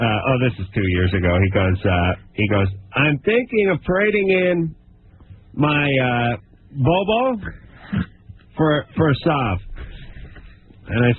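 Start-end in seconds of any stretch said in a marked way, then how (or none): 2.9-9.6 put-on heavy, thick Spanish accent, slow and unhurried. Retelling what the barber from Spain said while cutting hair: imitating Oscar's thick Spanish accent. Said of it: "He has a very thick accent".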